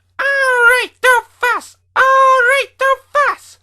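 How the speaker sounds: very high, silly, noisy truck voice. Narrator reading a story, voicing the trucks in a silly noisy truck voice. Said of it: "Now trucks are silly and noisy".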